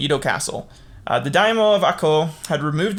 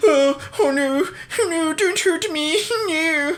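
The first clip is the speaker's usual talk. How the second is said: put-on very high, very slow, drawn-out, frightened old man voice; 12 semitones higher than usual. Retelling an attack on an old official: imitating a frightened old man. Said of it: "Kira, like, is an old guy, he's like".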